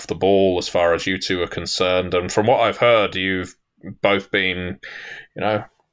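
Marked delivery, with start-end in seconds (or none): none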